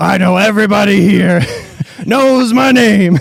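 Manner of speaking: loud, throaty, guttural voice from the gut. Showing a voice tried for a character: guttural voice. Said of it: "a guttural, like".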